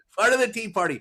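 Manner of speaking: said with pride. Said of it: "say it with pride".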